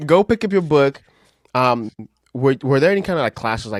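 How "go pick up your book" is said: put-on Jamaican accent, higher and louder. Imitating a mom telling her child to study: put-on jamaican accent. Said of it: "you butchered it".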